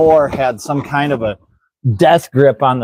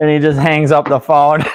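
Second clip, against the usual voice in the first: ordinary delivery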